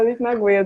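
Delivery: giggling, laugh breaking through the words.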